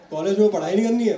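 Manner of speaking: high, loud mock scolding with disbelief.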